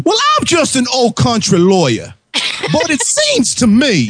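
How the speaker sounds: very high, sing-song, swooping cartoon voice. Weighing in on a legal discussion, in a Foghorn Leghorn voice. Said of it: "Froghorn Leghorn, you want to fucking speak with your real voice?".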